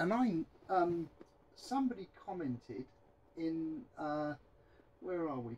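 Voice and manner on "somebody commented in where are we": faint, much softer voice, sounding off-mic. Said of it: "my voice has gone a bit faint".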